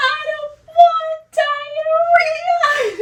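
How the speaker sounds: play-acted crying child, very high, slow, drawn-out wail. Retelling what a crying boy said, imitating him crying. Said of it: "He's crying".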